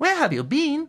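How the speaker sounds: very high, curious, inquisitive tone. Narrator voicing Terry as Grebby finally returns, curious question. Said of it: "asked a curious Terry".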